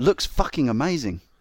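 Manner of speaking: put-on, attempted Australian accent. Reading out a commenter's message, put-on Australian accent as Roy. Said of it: "That was my attempt at his Australian accent".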